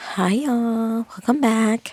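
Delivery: hushed, whispering voice. Greeting viewers at the start of a reading video, whispering. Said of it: "I'm kind of whispering".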